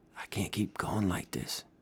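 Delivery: very soft, close, breathy whisper. Leaning across the counter to Maura, Freddy speaks in a whisper. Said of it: "He leaned across to her and whispered".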